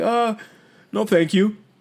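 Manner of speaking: halting, unsure voice. Imitating a husband's reply when offered a beer: imitating Bob's hesitant voice. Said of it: "you could hear the hesitation in his voice".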